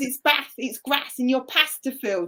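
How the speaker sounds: put-on Birmingham accent with local vowels. Comparing accents, retelling how a friend says bath: imitating a brummie friend. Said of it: "a Brummie that goes".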